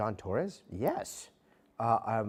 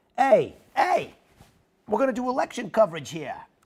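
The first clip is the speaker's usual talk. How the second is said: very loud, very high, joking New York accent; 13 semitones higher, 10 dB louder than usual. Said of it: "I sound like a New Yorker".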